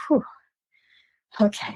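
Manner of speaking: put-on relieved exhale. Retelling a moment after a match: retelling a relieved breath out. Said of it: "I just took a breath".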